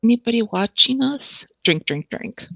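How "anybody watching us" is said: ventriloquist-style, lips still, higher pitch, aside. Taking a sip of a drink, the character speaks: quiet, barely moving lips. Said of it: "just say kind of quietly without really moving my lips".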